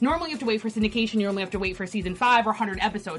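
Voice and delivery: talking really fast, rushed, rattled off. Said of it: "I know I'm talking really fast".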